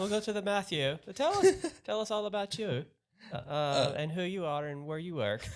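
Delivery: bad, weak put-on English accent, very high. Handing over to Matthew to introduce himself, the speaker uses a bad English accent. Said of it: "That's the best English accent I got".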